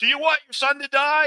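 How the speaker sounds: very high, loud screaming. Reviewing a movie, the speaker acts out a character screaming at a father. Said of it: "He's like screaming at him".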